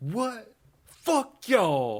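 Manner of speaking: shrill, very high, loud fake voice. Acting out how the accused man answers charges: impression of the accused man. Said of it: "That's my impression".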